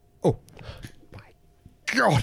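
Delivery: gagging, retching through the words. A vicar, suddenly feeling sick, speaks while retching. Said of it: "I'm retching".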